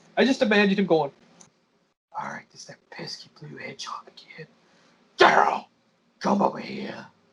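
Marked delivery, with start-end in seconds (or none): 2.1-7.0 cartoon villain voice, hushed and breathy. Speaker imagining what the villain would say, doing a Jim Cummings Robotnik impression. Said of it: "my best Jim Cummings Robotnik impression".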